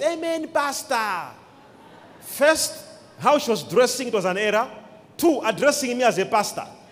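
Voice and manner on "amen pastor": mock woman's very loud shout. Retelling how a lady in the meeting shouted: imitating a woman shouting loudest. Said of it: "shouting the loudest".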